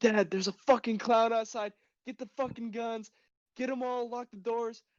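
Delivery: frantic, alarmed, panicked yelling, high pitched. Retelling pounding on dad's door at night, retelling own yelling. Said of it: "Why are you yelling?".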